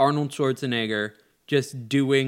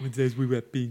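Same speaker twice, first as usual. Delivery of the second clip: bad put-on Austrian accent; 3 dB quieter than usual. Talking about lines from a movie, the speaker tries one in a bad Arnold accent. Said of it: "I would try my bad Arnold accent".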